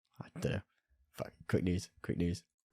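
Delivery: ordinary talk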